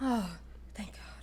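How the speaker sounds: breathy, relieved whisper.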